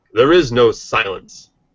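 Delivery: put-on announcer-style voice. Reading out a one-line writing prompt: announcer voice. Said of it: "I'm going to do it in an announcer voice".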